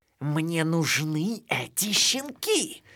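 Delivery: high, hissed, menacing villain voice. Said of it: "прошипела Стервелла".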